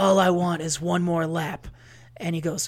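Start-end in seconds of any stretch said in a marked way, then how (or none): 0.0-1.7 slow, dramatic dog voice. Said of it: "that dramatic ass Kevin Costner voice".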